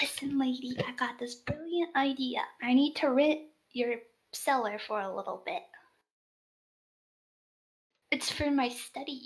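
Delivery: whispering. A character leans over the bar close to a woman's ear, whispering. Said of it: "whisper something in her ear".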